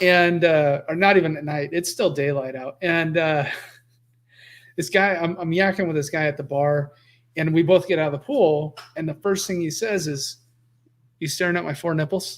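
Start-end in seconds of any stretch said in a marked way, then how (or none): 11.2-12.4 put-on deadpan delivery. Retelling meeting a guy at a pool bar, the speaker quotes his first words: retelling a deadpan line. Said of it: "Like dead deadpan".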